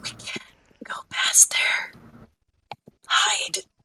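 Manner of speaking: slow, hushed, barely voiced whisper. Voicing a character who grabs a player's wrist and warns: whispering. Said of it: "She's whispering".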